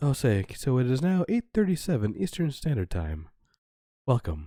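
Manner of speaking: slow public-radio announcer voice. Comparing the other speaker's time announcement to radio: NPR announcer impression. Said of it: "tuning into N P R and they're going".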